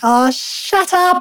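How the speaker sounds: high, slow, drawn-out put-on voice of a fed-up deity. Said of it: "God's probably like".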